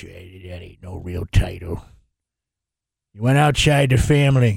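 put-on very low, rough, creaky, cranky old man voice. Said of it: "I shouldn't even do my bad old man on the porch".

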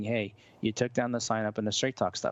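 ordinary delivery

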